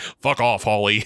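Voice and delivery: sudden switch to a full grown man's voice. Recounting a funny scene, the speaker quotes Brandon's reply to Holly in Brandon's full man's voice. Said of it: "with a full man's voice".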